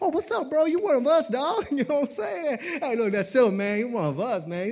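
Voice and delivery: Hawaiian pidgin. A speaker from Hawaii showing how his best friends talk, talking like his Hawaii friends. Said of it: "so I try to talk like that".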